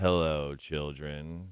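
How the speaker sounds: very low, flat monotone delivery. Recalling an actor who played a teacher: Ben Stein monotone voice. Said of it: "he had a very monotone".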